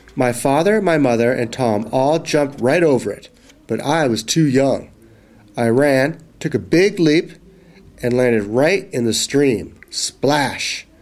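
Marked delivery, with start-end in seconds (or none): none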